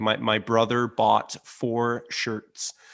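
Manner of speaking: slow rhotic American accent, strong R in brother, four, shirts. Showing how american accents sound the r: american accent with strong r. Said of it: "American accents have a very prominent R sound".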